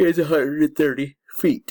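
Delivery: talking through a yawn. Explaining an angle-of-depression problem, yawning while talking. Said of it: "sorry for yawning".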